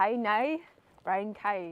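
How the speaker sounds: put-on Irish accent. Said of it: "that literally sounded Irish".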